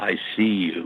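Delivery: hushed, very deep man's voice. Retell how a doll three steps away spoke to you, imitating a very deep man's voice. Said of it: "a very deep man's voice".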